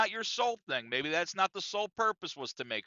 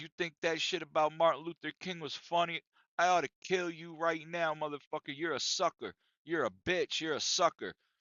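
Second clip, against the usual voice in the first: put-on drunk man voice, threatening. Retelling how a drunk man grabbed the speaker's collar: imitating a drunk man's threat. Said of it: "he started going in on me".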